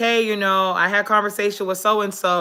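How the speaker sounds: plain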